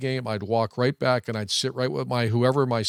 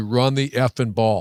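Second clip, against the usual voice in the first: ordinary talk, nothing marked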